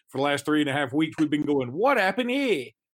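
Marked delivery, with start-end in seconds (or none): 1.7-2.6 put-on, pitched-up Australian accent with Southern drawl. Retelling a running joke from recent weeks, the speaker repeats the catchphrase: Australian accent with southern drawl. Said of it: "but with a southern drawl".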